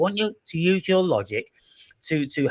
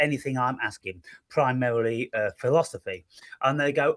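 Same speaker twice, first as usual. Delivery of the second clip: usual speaking voice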